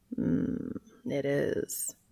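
rough, sleep-roughened, breathy whispered murmur. Cass answers Dean's good morning; sleep-roughened. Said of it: "comes Cass's sleep-roughened reply".

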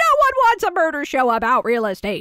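high, half-shouted. Picturing Martin Short yelling at the show's characters: imitating Martin Short yelling. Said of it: "I wanted Martin Short to walk in and yell".

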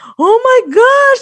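high, slow, freaked-out gasping voice. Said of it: "like, freaking out".

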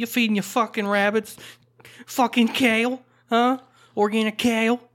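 loud put-on New Jersey accent, very high-pitched. Talking with the other person, the speaker slips into a New Jersey accent. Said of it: "I sounded like I'm from New Jersey".

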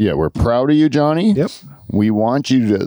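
ordinary talk

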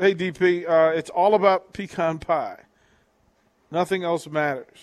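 normal talking voice

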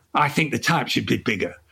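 put-on slightly aggressive, combative northern English accent. Retelling what the sidekick said of each cover: imitating Chris, aggressive northerner. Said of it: "slightly aggressive northerner".

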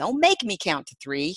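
loud put-on Southern drawl. Host introducing a guest's book title, saying it in a southern drawl. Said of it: "I just always want to say it in a southern drawl".

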